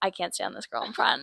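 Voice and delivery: hushed, breathy, intimate whisper close to the ear. Retelling what dad said at the other side: imitating a whisper. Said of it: "whispering in my ear".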